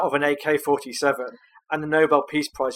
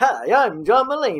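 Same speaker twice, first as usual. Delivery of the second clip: put-on high, slow, old-time fifties radio announcer voice; 7 semitones higher than usual. Showing a listener John Mulaney's persona before his life fell apart, in a John Mulaney 1950s radio voice. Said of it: "he's got this like nineteen fifties radio voice".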